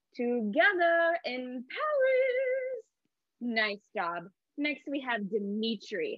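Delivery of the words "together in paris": pitch soaring very high, Paris drawn out. Leading a group through the grandmother's phrase in a voice exercise: really high voice. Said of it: "go up really high with your voice".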